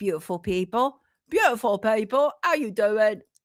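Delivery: sudden put-on Cockney accent. Host greeting viewers while bringing in new images, in a Cockney accent. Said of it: "why have I just suddenly gone into something of a Cockney accent?".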